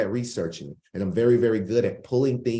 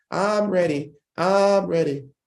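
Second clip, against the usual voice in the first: high cartoon voice, very slow, each word stretched; 8 semitones higher than usual. Showing the chat how to say it: SpongeBob voice. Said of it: "That's how SpongeBob said".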